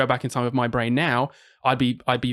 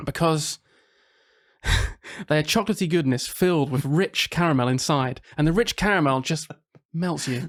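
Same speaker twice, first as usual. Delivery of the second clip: slow, put-on TV commercial sales voice; 3 semitones higher than usual. Explaining why a favourite chocolate is the best: put-on advert voice. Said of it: "I'm going to advert mode".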